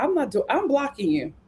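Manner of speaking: plain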